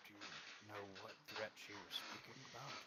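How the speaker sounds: very quiet, fast, hushed mutter. Asking a fellow party member about a threat, in character: saying it under his breath. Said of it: "kind of say under my voice".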